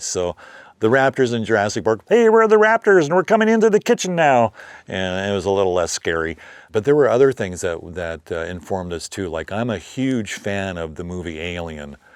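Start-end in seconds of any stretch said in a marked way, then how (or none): 2.1-4.5 very high, loud, froggy puppet voice. Voicing raptor hand puppets for a close-up, in a Kermit the Frog voice. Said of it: "I was doing Kermit the Frog's voice".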